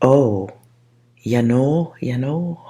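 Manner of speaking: put-on northern American accent, Minnesota or Canadian. Describing how someone sounded: Minnesota or Canadian accent. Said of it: "Or is that a Canadian accent?".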